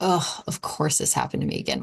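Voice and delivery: sarcastic, exasperated complaining grumble. Showing how a complaint sounds in a grumbling tone: sarcastic complaining tone. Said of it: "say it in your tone".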